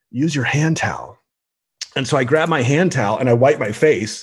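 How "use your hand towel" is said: put-on gentle, soft whisper. Retelling a yoga class where the instructor comes by: imitating a gentle whisper. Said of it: "she gently whispers".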